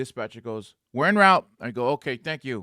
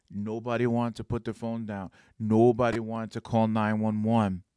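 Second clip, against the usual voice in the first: usual speaking voice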